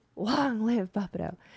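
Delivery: hushed whisper. Voicing a character named Cora who leans in to a group: whispering. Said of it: "Cora is going to whisper".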